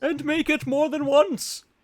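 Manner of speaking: very high-pitched voice. Finishing a motto line the other speaker started: James impression. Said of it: "my impression of James".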